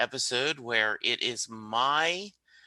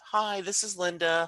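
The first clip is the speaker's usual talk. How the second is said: put-on woman's phone voice, pitched up; 7 semitones higher than usual. Showing how the speaker calls a company pretending to be their wife: imitating wife Linda's voice. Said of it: "pretend to be my wife".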